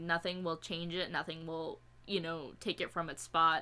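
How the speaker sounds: normal talking voice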